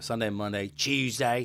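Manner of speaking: put-on British accent. Showing how British people say the days of the week, British accent. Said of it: "British people say the days of the week like this".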